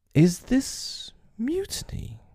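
very high, sweetly pleasant, sing-song voice. Hook answers Starkey's refusal in front of the crew, very pleasantly. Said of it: "more pleasantly than ever".

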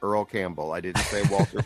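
ordinary talk

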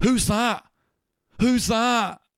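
very high-pitched, stretched-out, drawn-out yell. Speaker retelling a man in a video who sees the big owl man, retelling a shout. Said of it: "he just shouts".

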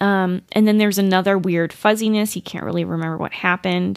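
plain

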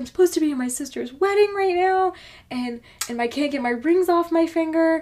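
put-on high, frantic, freaking-out panic. Retelling a lady who ran in at work: imitating a frantic woman. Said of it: "she's frantic, freaking the fuck out".

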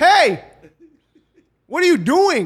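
shrill, high, very loud yelling. Retelling a scene at the Chick-fil-A, speaker re-enacts yelling at the guy: retelling own yell. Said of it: "And I yell".

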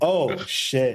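normal talking voice

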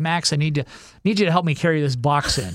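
ordinary talk

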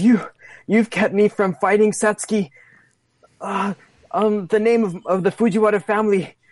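anguished dying voice. Voicing a fighter falling to her knees after a heavy attack: dying in agony. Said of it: "she grabs her, her short sword and, and she says".

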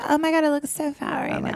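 mock millennial-style vocal fry. Mocking how millennials talk, in vocal fry. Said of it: "A lot of vocal fry".

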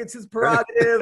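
light, playful, called-out taunting tone. Retelling yelling at a late performer at a concert: imitating own yell. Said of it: "I'm yelling".

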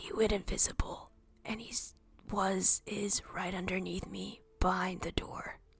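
faint, very quiet, barely-there whisper. Whispering a message in character into a sending stone: very quiet whisper. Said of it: "Very quietly, I whisper into the".

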